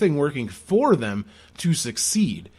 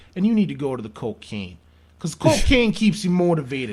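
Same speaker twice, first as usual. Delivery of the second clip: New Jersey accent, slipped into casually. Speaking to Sam during a comedic bit, in a New Jersey accent. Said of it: "slipped into a New Jersey accent".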